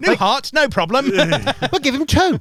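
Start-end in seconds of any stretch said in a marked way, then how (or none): 1.1-2.4 put-on British accent, higher-pitched and slower. Speaker acts out a doctor during a story, in a put-on british doctor accent. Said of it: "Why are we doing British impressions?".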